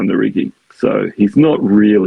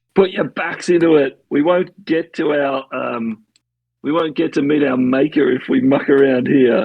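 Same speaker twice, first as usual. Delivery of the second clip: excited, eager, rousing rallying call; 5 semitones higher than usual. Player retells a character's order to the crew, retelling Ned shouting at crew. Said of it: "shouting at the crew".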